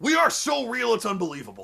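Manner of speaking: exaggerated, hammy, loud, rough wrestler voice. Quoting what he says, doing a Hulk Hogan voice. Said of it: "I don't know if I can do the voice because my throat's kind of messed up, but we'll try".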